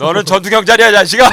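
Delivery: loud gruff instructor voice.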